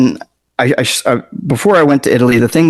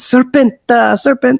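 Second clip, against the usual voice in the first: mock child scream, much higher; 11 semitones higher than usual. Retelling how a kid kept pointing at a rock, imitating a kid screaming. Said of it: "this kid starts screaming".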